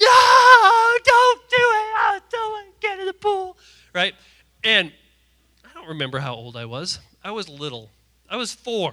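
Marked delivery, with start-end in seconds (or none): 0.0-3.6 very high, very loud scream, "no" stretched long. Retelling being grabbed by mom at age four, retelling a childhood scream. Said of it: "I'm screaming like".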